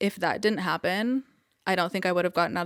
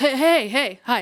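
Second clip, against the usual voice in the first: frantic, flustered, loud, pitched-up voice; 5 semitones higher, 5 dB louder than usual. Retelling how he answered FaceTime from his car, imitating a frantic greeting. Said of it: "he's in his car buckling his seatbelt like all frantic".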